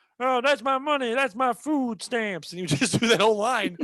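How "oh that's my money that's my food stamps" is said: energetic TV-style basketball announcer commentary delivery. Retelling how a man would imitate the NBA Jams commentary, in a Clark Kellogg voice. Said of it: "that was a Clark Kellogg voice he was doing".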